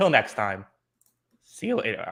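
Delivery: voice breaking and cracking at the end. Signing off at the end of a podcast episode: voice cracking. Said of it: "my voice cracked at the end".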